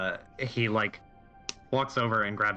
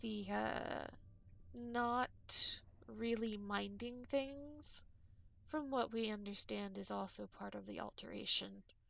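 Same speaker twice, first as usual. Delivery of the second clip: much quieter low hushed tone, not quite whispering; 12 semitones higher, 17 dB quieter than usual. Narrating a character who leans toward Maxine to speak, in a low hushed tone. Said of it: "in a very in a low tone".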